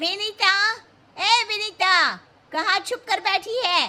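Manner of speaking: high, calling shout. A friend bursts into the house calling for Vinita, shouting. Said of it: "तुम ऐसे चिल्ला क्यों रही हो?".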